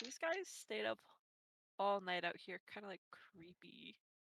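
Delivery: soft, mumbled muttering under the breath. A narrator voicing priests reacting to the players, mumbling to themselves. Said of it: "kind of mumbling to themselves like".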